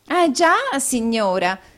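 animated, high, swooping exclaiming. A young woman replies to a lady who has addressed her: exclaimed. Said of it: "esclamò la signorina Squeers con un altro inchino".

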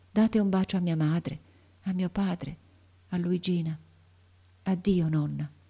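voice like a breath, barely audible. The boy speaks to his grandmother in a voice like a breath. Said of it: "con una voce che pareva un soffio".

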